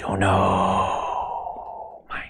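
Zen-master phrasing, break between "know" and "mind". Quoting a Korean Zen master's teaching, imitating Sun Sunim. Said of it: "That's how he'd say it".

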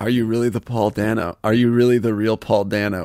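normal talking voice

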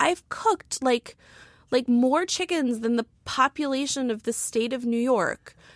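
high, slow, indignant, outraged rant. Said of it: "such a purity to his rage".

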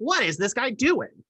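very high-pitched, nasal voice. Imitating a comedian watching from the side of the stage: John Mulaney impression. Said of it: "a good impression for you".

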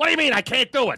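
high, fast, indignant voiceover-style voice. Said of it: "Then you're the voiceover guy".

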